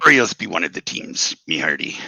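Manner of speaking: playful put-on pirate accent. Listing baseball teams, picking up the other speaker's bit in a pirate voice. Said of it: "That was a really good pirate".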